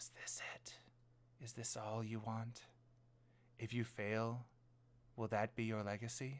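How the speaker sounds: soft, eerie whisper, close to the ear. Guiding the listener through a scene, voicing the voice whispering in their ear. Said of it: "that voice ... is whispering in your ear again".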